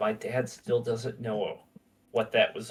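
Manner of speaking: quiet whispering. Voicing a character telling a visitor a secret: whispering. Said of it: "kinda whispers".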